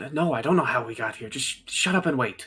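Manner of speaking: hushed, stage-whispered delivery. Narrator gives the words of a second voice the listener recognizes, very hushed. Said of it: "very hushed".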